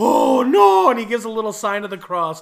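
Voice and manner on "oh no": put-on very high, very loud cry in Irish accent. Retelling a movie scene where a cop watches men fall: imitating an Irish cop. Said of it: "the Irish cop".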